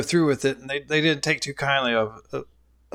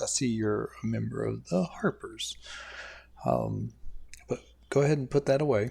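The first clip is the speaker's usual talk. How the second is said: speaking with a lowered, hushed voice; 3 semitones lower, 7 dB quieter than usual. Narrator voicing a man speaking to a Harpers member, lowered voice. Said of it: "he lowers his voice".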